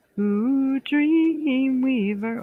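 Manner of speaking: voice cracking. Host asking a viewer to pick a number, voice cracking. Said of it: "my voice is cracking".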